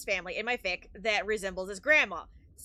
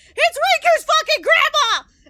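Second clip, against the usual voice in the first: put-on very loud, very high, thrilled excited yell; 14 dB louder than usual. Retelling a first reaction to a character's introduction: retelling an excited outburst. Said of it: "I lost my fucking shit".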